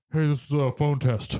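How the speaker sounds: put-on small, childlike little-kid voice. Recounting a kids' movie scene, quoting Rocky in his little kid voice. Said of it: "with his like little kid".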